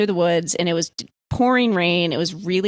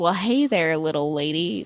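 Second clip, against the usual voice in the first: fake southern accent drawl. Quoting a hometown sheriff trying to play good cop, imitating a southern drawl. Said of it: "like real southern and like trying to be".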